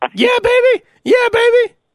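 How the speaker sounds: high, loud, stretched-out excitement. Imagining negotiating with wrestling manager Jimmy Hart: imitating Jimmy Hart. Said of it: "Jimmy Hart had the megaphone".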